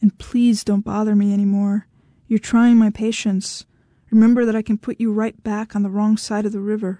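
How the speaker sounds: usual speaking voice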